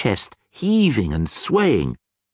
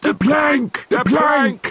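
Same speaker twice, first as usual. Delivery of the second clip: several voices, high-pitched pirate yell together; 11 semitones higher than usual. Pirates Ben Buckle and Percy Patch react to the troll throwing the gold away, yelled. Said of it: "Yelled Ben Buckle and Percy Patch".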